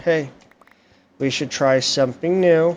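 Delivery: calm, collected, composed, even-tempered voice. Showing how a parent should speak in front of kids: calm, collected voice. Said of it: "Have a calm, collective voice like this saying".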